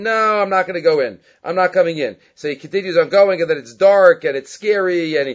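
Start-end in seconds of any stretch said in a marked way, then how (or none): none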